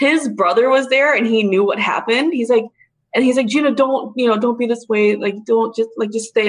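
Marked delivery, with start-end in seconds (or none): none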